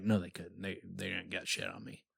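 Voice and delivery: mock whisper. Retelling how a man turned and whispered a remark, retelling a whispered aside. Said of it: "he's like turning whispering".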